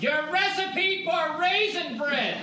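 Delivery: very high, slow, drawn-out sitcom-style holler.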